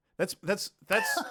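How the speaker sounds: plain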